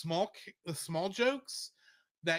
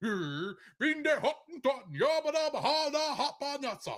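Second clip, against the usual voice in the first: put-on Swedish-sounding gibberish voice; 8 semitones higher than usual. Showing listeners an impression he can do, a Swedish Chef impression. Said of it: "I can kind of do a pretty decent Swedish chef impression".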